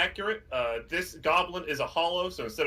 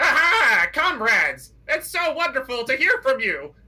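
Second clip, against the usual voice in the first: very high, loud, squeaky goblin voice; 10 semitones higher, 9 dB louder than usual. Voicing a goblin greeting visitors behind a door: goblin voice. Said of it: "you hear in Goblin from behind the door".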